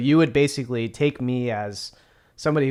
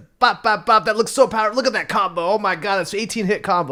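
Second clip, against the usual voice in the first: put-on drunken, high-pitched, excited hype shouting; 9 semitones higher, 5 dB louder than usual. Playing a drunk player yelling hype into the mic: acting drunk, yelling hype. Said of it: "I'm drunk, and I'm not good at explaining it, and I'm just yelling things into the mic".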